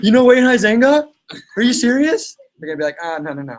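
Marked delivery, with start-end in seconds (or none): 0.0-2.4 loud, high, super-excited, fired-up gush. Acting out how someone super pumped up would ask, mock super-pumped excitement. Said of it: "if you get super pumped up?".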